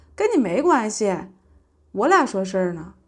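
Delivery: ordinary delivery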